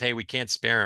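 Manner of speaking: normal talking voice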